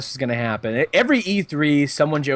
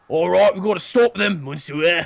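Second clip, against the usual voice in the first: badly done put-on British accent; 4 semitones higher than usual. Mocking how characters talk in the game Unity, bad British accent. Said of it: "talking in a bad British accent".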